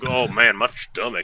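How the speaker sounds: put-on slow, drawling old Southern man's voice. Retelling a fart spray prank video: imitating an old southern guy. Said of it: "the old Southern guy".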